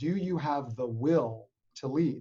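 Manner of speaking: will leaned on hard with heavy stress. Repeating an interview title to highlight one word, stress on will. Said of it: "I really want to emphasize a word in that title".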